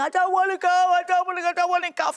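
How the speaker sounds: put-on high, screaming, wailing, howling child's voice. Retelling a young daughter's fear of the hospital: imitating a screaming, howling child. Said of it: "She was screaming, howling".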